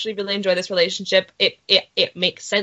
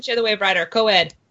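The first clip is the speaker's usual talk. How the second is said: rapid, rushed delivery. Joking about the Arrowverse sleepover, a speaker says this really fast. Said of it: "you said it really fast".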